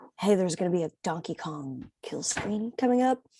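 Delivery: play-acted grave, self-important, hushed, dead-serious tone. Acting out a man walking up to people with a warning, mock very serious tone. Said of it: "in like a very serious tone".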